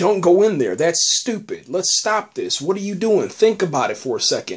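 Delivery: ordinary talk, nothing marked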